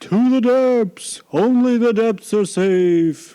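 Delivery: very high whale call with long drawn-out safe. Voicing a whale calling another whale to flee: whale voice. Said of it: "This is my whale voice".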